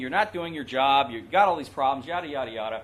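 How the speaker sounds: plain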